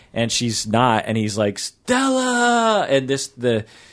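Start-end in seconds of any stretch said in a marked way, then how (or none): 1.5-2.8 put-on, very high, long, stretched-out, drawn-out yell. Retelling a movie scene where he yells up to his wife: imitating Marlon Brando yelling. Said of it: "he's yelling up to his wife".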